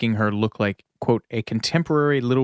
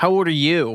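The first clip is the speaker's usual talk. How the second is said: put-on bratty child voice, high; 6 semitones higher, 3 dB louder than usual. Retelling an auditioner's reply when asked her age; Cecile's bratty voice. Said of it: "in Cecile's bratty voice".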